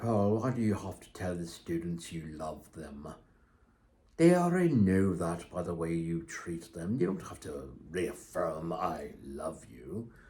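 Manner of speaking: put-on speaking with British accent. Quoting the assistant headmaster at his old school, in a British accent. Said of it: "with his British accent".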